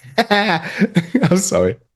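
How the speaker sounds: high, slow, laughing voice. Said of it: "I'm just laughing".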